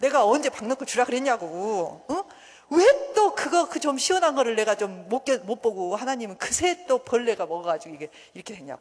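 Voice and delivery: loud, angry, complaining tone.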